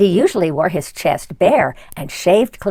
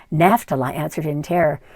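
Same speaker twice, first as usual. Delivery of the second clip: ordinary delivery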